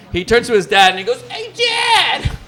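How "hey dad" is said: put-on squeaky, very high, strangled pre-puberty boy voice. Retelling how a kid called to his dad: imitating a pre-puberty kid's voice. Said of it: "if I'm exaggerating this voice".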